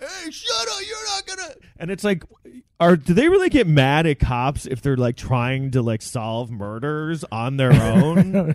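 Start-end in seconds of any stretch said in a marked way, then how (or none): 0.0-1.5 very high, strained mock yell. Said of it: "he's, like, yelling at him".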